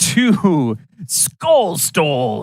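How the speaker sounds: slightly rough, gravelly delivery. Announcing the event name at the start: a little gravel in the voice. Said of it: "with a little bit of gravel in your voice".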